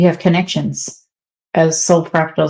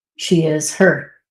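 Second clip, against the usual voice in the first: usual speaking voice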